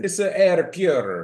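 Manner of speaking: over-the-top, loud, high-pitched, exaggerated put-on Italian accent. Redoing a line after calling the first try bad, exaggerated Italian accent. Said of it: "That's better".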